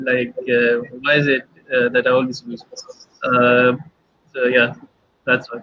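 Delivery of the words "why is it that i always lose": plain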